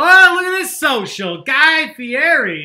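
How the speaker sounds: very high, very loud, shrill, drawn-out hollering. Video host checking viewers' answers about their favorite Muppet; yelling. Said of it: "Sorry if I'm yelling, but I'm yelling".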